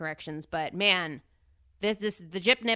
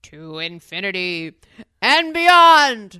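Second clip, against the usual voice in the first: booming, very loud, very slow, drawn-out cry; 14 dB louder than usual. Doing impressions with a friend, in a Buzz Lightyear voice. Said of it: "Buzz Lightyear is hard".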